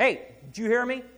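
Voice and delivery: very loud, shrill, stern, angry dad voice. A speaker recalls warning his kids, put-on dad voice. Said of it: "when I put on the dad voice".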